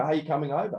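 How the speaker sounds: bright, eager, excited, upbeat tone. Explaining a text message meant not aggressively, asking it as a mock-excited question. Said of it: "I meant it in a, an exciting way".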